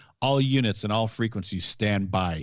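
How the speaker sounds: usual speaking voice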